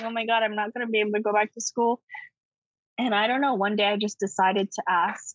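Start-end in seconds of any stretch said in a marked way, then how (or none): 0.0-2.0 acted panicked crying, faster. Retelling a past moment of panic, acting out crying and freaking out. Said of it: "I'm crying".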